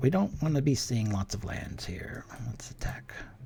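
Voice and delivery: soft unvoiced whispering.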